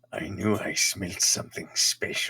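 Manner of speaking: half-swallowed, low muttering to oneself. Voicing an unseen character the players hear nearby: muttering. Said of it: "you hear a voice basically mutter".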